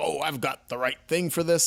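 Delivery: put-on comic villain voice. Retelling a comic panel where Shredder grabs a blaster: Shredder voice. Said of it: "I'm hearing Shredder's voice".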